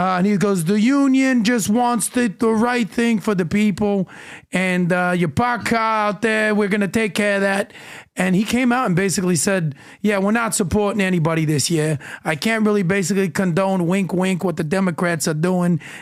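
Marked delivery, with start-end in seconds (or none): 0.6-7.7 put-on, sort-of New York accent. Retelling what a Teamsters union representative said to him: put-on New York accent. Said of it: "I'm sort of doing a New York accent".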